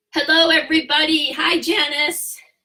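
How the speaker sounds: eager, thrilled, audibly excited voice. A consultant greets everybody and Janice before showing the brochures: excited voice. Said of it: "Can you tell in my voice how excited I am?".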